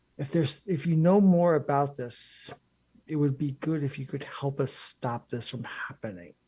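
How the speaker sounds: plain, direct tone. Speaking in character to him, hoping another character won't overhear: speaking very quietly. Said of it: "I'll say to him very, very quietly".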